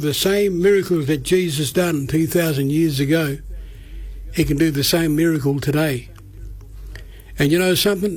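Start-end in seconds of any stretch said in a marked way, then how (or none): none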